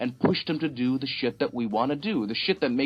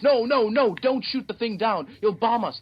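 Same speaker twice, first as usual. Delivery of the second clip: put-on motherly voice, screaming; 8 semitones higher than usual. Describing a scene, voicing the mother as her boy grabs a rifle, screaming. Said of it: "And the mother screams".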